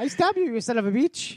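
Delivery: grand, high-pitched society voice. Imagining the dog thief's words as Zsa Zsa Gabor: Zsa Zsa Gabor voice. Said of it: "I just imagine Zsa Zsa Gabor doing this".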